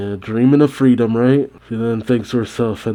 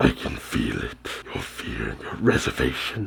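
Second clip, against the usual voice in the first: breathy, evil whisper; 12 semitones lower, 11 dB quieter than usual. Recapping a manga scene, voicing Kurama speaking to Kushina: Kurama voice. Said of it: "I don't know if I can do the voice".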